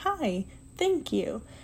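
polite, courteous customer-service counter voice.

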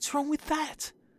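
soft whisper, under the breath. The narrator answers a little imp's warning, whispered. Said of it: "I whispered".

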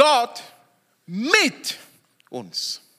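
stress landing on the word mit. Explaining the second emphasis in a short phrase, stress on mit. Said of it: "Die zweite Betonung ist mit".

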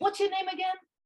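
put-on, very high yell across a room. Retelling what he yelled back while the kids made posters: retelling a yell. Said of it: "he yelled back".

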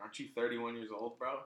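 usual speaking voice

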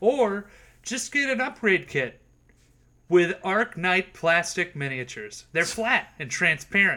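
salesy advertisement ad-read voice. Recommending plastic miniatures during a tabletop game chat: sponsor ad-read voice. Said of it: "why they got my sponsor voice".

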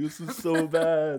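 mock, very slow, high, weepy crying whine. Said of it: "crying into the mic".

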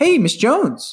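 very high, chummy, friendly tone. Retelling his improved call opening, imitating his own friendly greeting. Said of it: "as if I was their friend".

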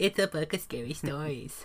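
soft, scornful, mocking put-on movie trailer voice. Describing a voice in their head that mimics the book's phrase, mocking imitation. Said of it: "mimics it in a mockingly way".

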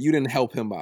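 plain

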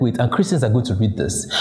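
ordinary delivery

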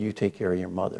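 serious tone. Quoting what a man told his kids after a joke: retelling a serious tone. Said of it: "he got very serious and he said".

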